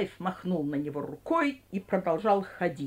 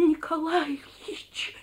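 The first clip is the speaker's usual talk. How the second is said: audible stage whisper, very high pitch; 10 semitones higher than usual. A young man who has just been pointed at calls someone's name in a loud whisper. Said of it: "громко зашептал он".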